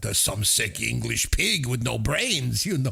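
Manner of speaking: put-on French accent. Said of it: "his French accent doesn't help".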